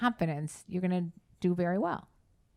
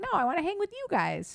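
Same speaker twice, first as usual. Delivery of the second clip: high-pitched put-on teen boy voice; 11 semitones higher than usual. Retelling what a teenage boy told his dad: high-pitched imitation of a teen boy. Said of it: "the voice got very high pitched and".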